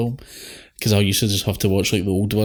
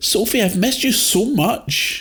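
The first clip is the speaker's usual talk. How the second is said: exaggerated, overdone British accent, very high-pitched; 13 semitones higher than usual. Imitating Sophie's British mates greeting her, in an exaggerated British accent. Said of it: "Talk your normal voice".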